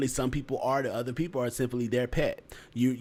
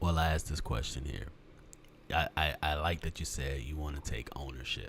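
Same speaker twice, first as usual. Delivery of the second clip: put-on voice dropped much deeper, way down low. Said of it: "I put my voice deeper".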